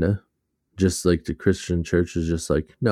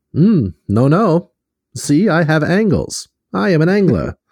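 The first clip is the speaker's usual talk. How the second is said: very high, loud, swooping, old-fashioned put-on voice; 11 semitones higher, 6 dB louder than usual. Acting out an imagined reply to someone pointing out a fisher, old-timey voice. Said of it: "here comes the old timey voice again".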